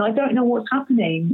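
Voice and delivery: mock weeping, crying and tearful through the words. Retelling breaking down at a doctor's office: retelling own crying. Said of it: "I ended up just crying, going".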